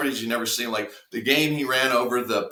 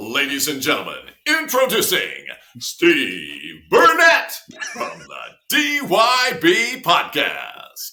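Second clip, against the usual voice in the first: loud, swooping stadium announcer voice; 5 dB louder than usual. Asked to show how they MC, doing a stadium announcer voice. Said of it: "I can impersonate a stadium announcer".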